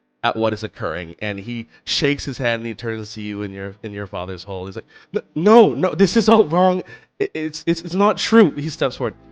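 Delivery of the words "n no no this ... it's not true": panicked, horrified, pleading tone. Voicing Archibald accused by his family: panicked, horrified denial. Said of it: "Archibald looks panicked, uh, horrified".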